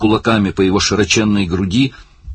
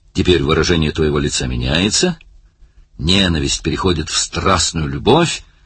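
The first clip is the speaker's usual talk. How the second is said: ordinary delivery, nothing marked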